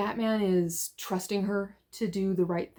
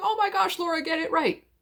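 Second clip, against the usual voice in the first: shrill, very high, acted-out screaming; 10 semitones higher than usual. Imagining the artist reacting to a butchered name: imitating Riley Rossmo screaming. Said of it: "in the background screaming, going".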